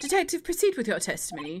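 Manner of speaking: put-on upper-class, posh English accent. Reading the judge's lines, the speaker gives him a posh English accent. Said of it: "keep him sounding posh English".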